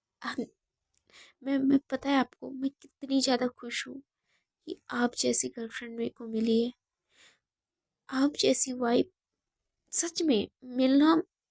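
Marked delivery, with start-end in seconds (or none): none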